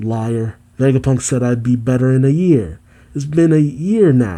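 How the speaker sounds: ordinary talk, nothing marked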